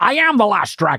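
Scottish accent like a film star's. Asked for a Sean Connery, the speaker tries a Sean Connery impression. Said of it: "Do you do a Sean Connery?".

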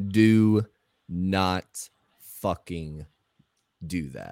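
slow, dead-serious, word by word. Retelling own past words after a car horn honk: imitating a slow, serious warning. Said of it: "you said it real slow".

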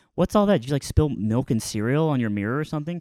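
ordinary talk

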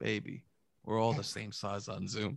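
soft, flirtatious whisper

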